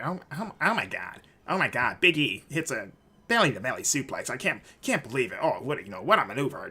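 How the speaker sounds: mock condescending, dorky commentator voice. Retelling how others mocked a dorky commentator: imitating a condescending dorky commentator. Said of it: "just really condescending voices like that".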